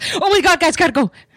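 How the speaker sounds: thrilled, very high, loud excited burst. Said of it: "She was very excited".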